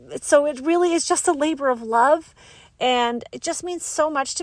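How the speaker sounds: choked-up, emotional voice, catching. Podcast host telling listeners how much their support means: getting emotional. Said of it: "I'm getting emotional".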